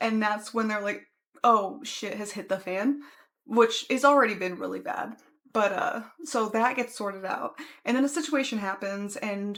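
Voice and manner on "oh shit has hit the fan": ordinary delivery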